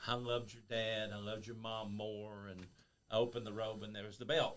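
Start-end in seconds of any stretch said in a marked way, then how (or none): 0.1-2.5 put-on fake crying and sobbing. Retelling a wrestling promo in the ring: retelling fake crying. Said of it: "I'm fake crying".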